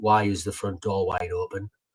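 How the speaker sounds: ordinary delivery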